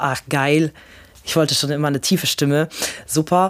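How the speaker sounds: ordinary delivery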